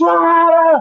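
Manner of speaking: play-acted very high, shrill, all-out furious screaming rage. Retelling an audition where he grabbed the guy: retelling a furious scream. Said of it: "I'm just screaming and spit is flying".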